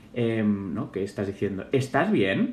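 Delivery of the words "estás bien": questioning pitch rise at the end on bien. Explaining how intonation makes a phrase a question, rising pitch on bien. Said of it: "el efecto que hace que una frase parezca una pregunta".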